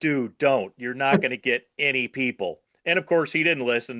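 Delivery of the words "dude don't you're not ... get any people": put-on pleading, begging tone. Retelling how they begged another filmmaker not to make flyers: retelling own begging. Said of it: "I begged him".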